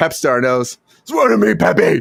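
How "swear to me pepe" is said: gravelly put-on voice, pitched higher. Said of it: "in his John Connor voice, where he's always still talking like Batman".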